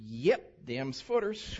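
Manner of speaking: put-on North Carolina mountain accent. Quoting someone from the county with a clipboard at a building site: north carolina mountain accent. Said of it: "don't mind if I do the mountain accent".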